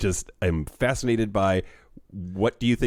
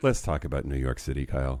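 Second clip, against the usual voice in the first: faintly sighing delivery; 7 semitones lower, 4 dB quieter than usual. Agreeing to talk about New York City, with a bit of sigh in voice. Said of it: "a bit of sigh in your voice".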